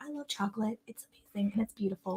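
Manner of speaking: very soft, tiny, cutesy little voice. Imitating a listener with a cute little voice talking about chocolate. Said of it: "she's got the cutest little voice".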